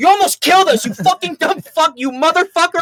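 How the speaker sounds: very high-pitched, loud screaming with swearing. Retelling being kicked and yelled at at three in the morning: imitating someone yelling. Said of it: "just starts yelling at me".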